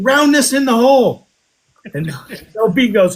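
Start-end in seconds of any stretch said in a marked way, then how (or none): 0.0-1.3 high-pitched hollering yell. Speaker recounts Tony yelling at them: retelling Tony's yell. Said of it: "Tony yells at me".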